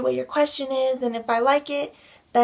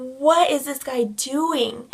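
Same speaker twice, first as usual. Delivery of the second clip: mock alarmed, spooked, drawn-out, freaked-out disbelief. Retelling a reaction to a guy's strange move: retelling freaking out. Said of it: "we start freaking out even more".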